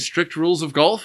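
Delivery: golf said with rising, questioning intonation. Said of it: "And they're saying".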